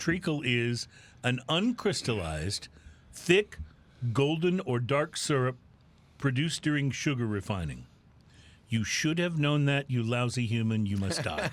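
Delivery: put-on menacing artificial-intelligence voice. Reading out what an ai said about treacle: imitating an ai. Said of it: "And here's what A I said".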